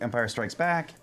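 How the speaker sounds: ordinary delivery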